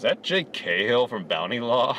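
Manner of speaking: ordinary talk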